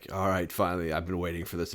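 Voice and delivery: taunting, goading, boss-like banter. Retelling a game boss fight, imitating Thor. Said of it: "he's like".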